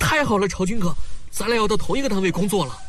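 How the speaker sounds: very high, loud, fast, overexcited shouting. Learning they will work in the same unit, telling him while excitedly shouting. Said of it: "你要嚷嚷的全世界都知道吗？".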